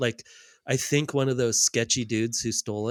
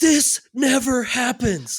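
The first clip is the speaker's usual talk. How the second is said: put-on excited voice, higher and louder; 12 semitones higher, 5 dB louder than usual. Retelling an investigator's reaction to the find: imitating a psyched investigator. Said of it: "so psyched".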